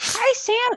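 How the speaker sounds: very high-pitched character voice. Asked to show it, doing an Elmo voice. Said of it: "My Elmo?".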